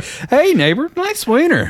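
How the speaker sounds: very high pitch, words stretched out. Acting out a made-up greeting: high-pitched Ned Flanders voice. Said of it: "high-pitched Ed Flanders voice, or Ned Flanders".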